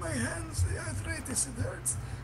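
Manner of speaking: put-on soft old man voice.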